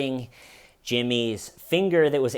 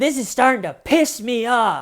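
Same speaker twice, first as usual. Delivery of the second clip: very high, loud, furious angry outburst; 12 semitones higher, 7 dB louder than usual. Retelling a suspect pounding on the table: imitating someone getting angry. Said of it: "Jimmy really gets angry on this one".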